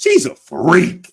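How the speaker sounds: hyped-up excited exclamation, high-pitched, slow and drawn out.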